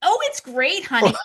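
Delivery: forced put-on cheer. Retelling how she answered her husband's phone call, faking cheerfulness. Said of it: "And I'm faking it like".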